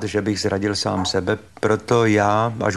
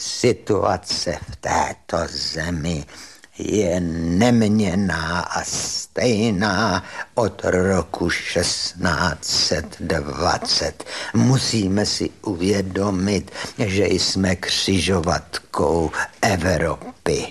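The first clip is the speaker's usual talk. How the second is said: shaky voice trembling throughout; 3 semitones lower than usual. Quoting your old art history professor's answer to people complaining about the times, in V.V. Štech's shaky voice. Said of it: "mluvil takovým roztřeseným hlasem".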